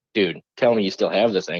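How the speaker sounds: ordinary talk, nothing marked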